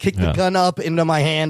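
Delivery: ordinary delivery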